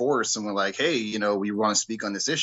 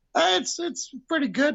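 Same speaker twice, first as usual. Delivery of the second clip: voice suddenly jumping to much higher pitch. Speaker mimicking a caller's answer to how are you, voice jumping way up. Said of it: "their voice goes up like 10 octaves".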